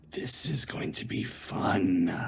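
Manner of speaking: creepy, slow whisper. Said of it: "very creepily put my hand".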